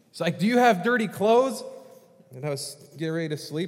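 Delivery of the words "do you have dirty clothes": loud, pitched-up TV infomercial pitchman voice. Retelling a late-night infomercial on tv: imitating a loud infomercial host. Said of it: "I hear this loud voice come on".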